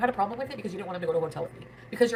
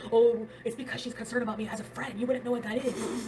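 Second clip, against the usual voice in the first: put-on angry tone, higher pitch; 4 semitones higher than usual. Retelling a boyfriend's reply on the phone: imitating someone angry. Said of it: "he got so mad".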